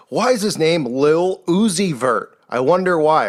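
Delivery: ordinary delivery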